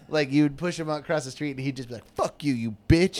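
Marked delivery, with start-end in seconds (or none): 2.1-3.1 put-on mean man's voice, harsh outburst. Retelling how the man cursed at people pushing him: imitating a mean man cursing. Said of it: "he was so mean".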